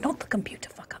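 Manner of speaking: in a hushed whisper. Guessing what a man will really talk about, the speaker whispers. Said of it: "Why are you whispering?".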